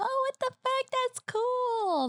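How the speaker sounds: mock, very high, excited squeal.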